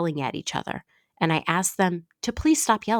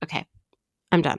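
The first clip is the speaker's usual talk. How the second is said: ordinary delivery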